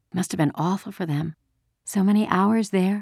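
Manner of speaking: soft murmur under the breath. Anne-Marie thinks of her friends hidden under the Ingeborg's deck and murmurs. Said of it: "she murmured".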